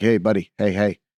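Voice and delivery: put-on Brooklyn accent. Recounting a psychedelic experience, the speaker quotes an insect alien in a brooklyn accent. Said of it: "he talked like he was like from Brooklyn".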